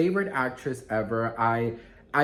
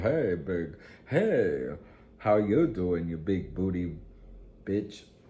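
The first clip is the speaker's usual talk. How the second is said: put-on low, slow, drawn-out Southern cowboy accent; 6 semitones lower than usual. Describing a man with a Southern accent, imitating how he talks. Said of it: "a man with a Southern accent".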